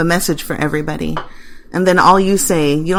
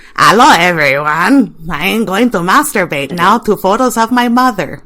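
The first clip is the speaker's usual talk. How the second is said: mocking, croaky frog-like voice, louder; 4 dB louder than usual. Mocking an acquaintance who sounds like a frog: imitating Nathaniel's frog voice. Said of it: "Nathaniel sounds like a frog".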